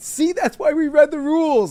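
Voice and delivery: play-acted sarcastic, giggling, very high-pitched tone. A coach retells his remark to a referee, retelling a sarcastic, laughing jab. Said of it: "like laughing".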